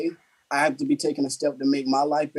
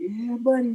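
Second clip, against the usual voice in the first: high, little voice, shrunk down small; 9 semitones higher than usual. Quoting a gym catchphrase while lifting with friends: imitating his little voice. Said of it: "I try to do it in his little voice too".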